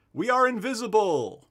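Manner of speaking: very high, booming yell. Game narrator voices a character calling down from the second floor, booming yell. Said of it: "his booming voice yells down from above".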